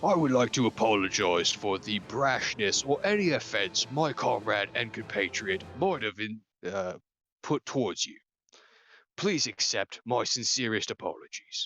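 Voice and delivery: unmistakably orcish voice. Narrator voicing a Kenku that approaches the party, orcish voice. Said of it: "you hear in an unmistakably orcish voice".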